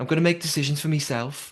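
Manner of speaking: high put-on Scouse accent, Liverpool style. Quoting a player's answer about strategy for the game, in a put-on scouse accent. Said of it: "That was my Scouse accent".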